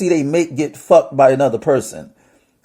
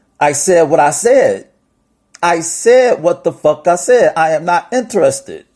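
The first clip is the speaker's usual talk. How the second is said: usual speaking voice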